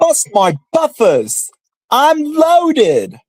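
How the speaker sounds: very high, swooping, loud, drawn-out voice. Asked to say the line in the Thomas voice: Thomas character voice. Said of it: "say the line in your Thomas voice".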